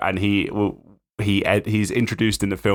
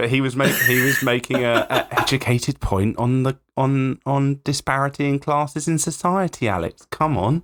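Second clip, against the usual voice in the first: put-on, playfully condescending, patronising voice; 4 semitones higher than usual. Lecturing another speaker about a character's point: mock patronising tone. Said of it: "I've just been patronising to Alex".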